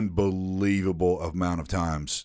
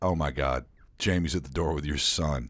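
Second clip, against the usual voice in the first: mock flustered, frantic, alarmed outburst; 3 semitones lower than usual. Retelling the moment of seeing someone at the door: imitating own panicked words. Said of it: "Glenn and I panicked".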